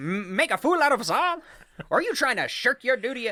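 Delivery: put-on old-fashioned 1930s picture-show style of speaking. Reading a quote aloud after being asked: 1930s-style delivery. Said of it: "you gotta say it like you're, uh, in the nineteen thirties".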